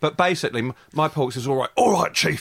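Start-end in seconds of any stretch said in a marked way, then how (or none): 1.8-2.4 put-on gravelly, hard-bitten cop voice. Voicing an inspector thrown off the force: gravelly voice as Porks. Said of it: "he's been thrown off the force and he's very gravelly".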